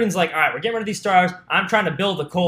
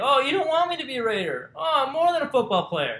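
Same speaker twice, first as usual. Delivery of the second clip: soft, whiny, mocking, pitched up, swooping up and down; 6 semitones higher, 5 dB quieter than usual. Mocking a player complaining to his coach: whiny mocking Antonio Brown impression. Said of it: "You sound like a whiny little bitch".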